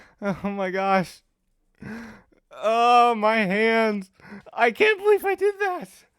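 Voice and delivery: very high voice, shaking with excitement. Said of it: "I'm shaking!".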